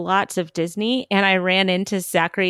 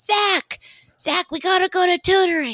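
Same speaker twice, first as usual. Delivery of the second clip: very high, artificially pitched-up voice; 11 semitones higher than usual. Retelling a meeting on a studio lot: Jonathan Taylor Thomas impression. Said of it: "your J T T impression that you just did".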